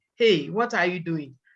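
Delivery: ordinary talk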